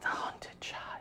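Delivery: faraway, disembodied, ghostly, hushed whisper. Voicing an unknown voice heard on entering the Botanica: distant disembodied whisper. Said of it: "distant, disembodied whisper".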